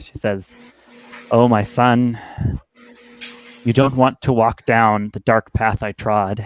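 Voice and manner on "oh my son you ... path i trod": normal talking voice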